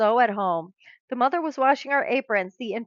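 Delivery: plain reading voice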